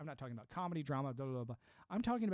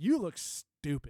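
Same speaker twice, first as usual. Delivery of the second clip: mock very loud, hostile, aggressive delivery; 9 dB louder than usual. Retelling a man at a Christmas party confronting someone dressed as an elf, mock-aggressive. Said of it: "he says it in this very aggressive".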